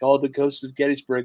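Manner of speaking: plain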